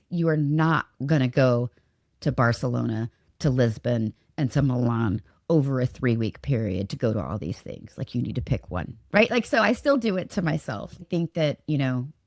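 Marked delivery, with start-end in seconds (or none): 0.1-9.3 firm, low, stern scolding tone. Retelling what someone says to talk them out of a long trip, in a mom voice. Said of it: "I'm about to use my mom voice".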